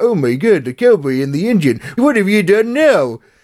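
goofy preschool cartoon voice. Describing how a horse in a children's series sounds, Barney the Dinosaur voice. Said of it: "in a very kind of Barney the Dinosaur".

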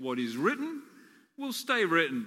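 play-acted smug sarcasm, swooping pitch. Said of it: "I'll be sarcastic".

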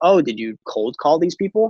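put-on playful, teasing, joking tone. A speaker retells what a woman asked about recruiting people, retelling a joking question. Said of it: "she jokingly was like".

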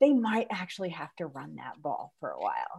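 hushed stage whisper.

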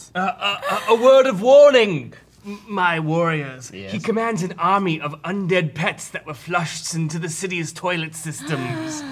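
high, flowery, grand, ceremonial royal advisor voice, played up. As the king's advisor warning the warriors, the speaker uses a Stewie Griffin-like voice. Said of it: "So, you have all been summoned to the capital city of [name] by the king's advisor, [name]. ... Is it just me or this guy? He sounds kind of like [name]".

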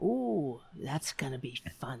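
hushed, sinister, menacing tone with relish. A host reacts to news that more indictments are expected, sounding sinister. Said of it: "I just sounded very sinister there".

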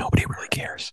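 very quiet, breathy whisper. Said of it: "if you wanna sound like Biden".

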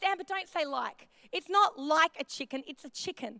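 ordinary talk

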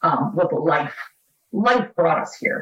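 choked-up, emotional voice catching on the words. Answering what brought them to the island, choked up. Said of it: "I'm gonna get choked up".

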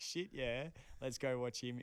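normal talking voice

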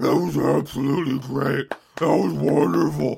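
put-on creaky old lady voice.

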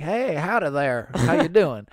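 put-on friendly voice. Describing people in the South, imitating friendly Southerners. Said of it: "people who are really friendly".

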